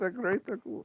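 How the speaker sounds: generic Eastern European accent. Speakers joke about doing voices; one tries an indiscriminate Eastern European accent. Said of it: "You can't do indiscriminate Eastern European guy".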